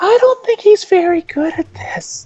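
small voice pitched way up. Explaining a comedian's gag to others, doing Jim Gaffigan's little voice. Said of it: "he does this little voice".

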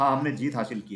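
ordinary delivery, nothing marked

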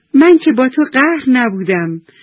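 high, loud, spoken through a laugh. The moon answers the spotted yellow snake, laughing. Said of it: "خندیده گفت".

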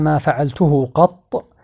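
ordinary talk, nothing marked

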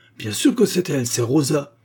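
loud, virulent, forceful, vehement delivery. Mademoiselle Lyle replies during the accusation of Rosa, with virulence. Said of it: "répliqua Mademoiselle Lyle avec virulence".

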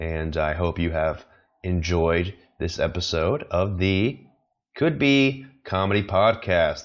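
rhythmic, deliberate, measured cadence. Wrapping up the podcast episode, with a deliberate cadence. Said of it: "like that cadence in my voice there".

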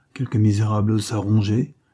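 plain

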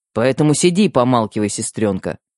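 plain

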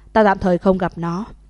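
ordinary delivery

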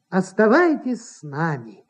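plain reading voice

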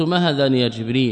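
normal talking voice

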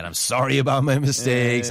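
plain

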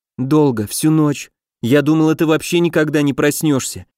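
ordinary delivery, nothing marked

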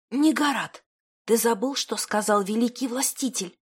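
soft half-whisper under the breath. Narrator reads the mother's reply to her son, in a half-whisper. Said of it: "Шепотом произнесла мать".

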